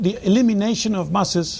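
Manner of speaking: ordinary talk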